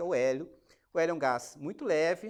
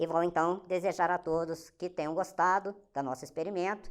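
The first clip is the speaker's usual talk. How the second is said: strange, squeaky, helium-like altered voice; 3 semitones higher than usual. Presenter of a helium experiment, right after inhaling from the balloon, strange helium voice. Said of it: "Eu fiquei com essa voz estranha".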